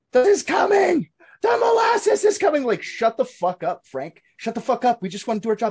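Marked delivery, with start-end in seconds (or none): 0.2-2.7 shrill, very high, loud, panicked yell. Recounting a historical story about a man warning workers: retelling a man yelling a warning. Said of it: "the guy yelling at molasses".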